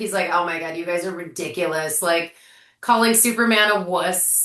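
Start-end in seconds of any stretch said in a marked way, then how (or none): 0.3-2.0 put-on sarcastic hero voice. Retelling a witty line from the movie: sarcastic Mister Terrific impression. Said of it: "He's so sarcastic".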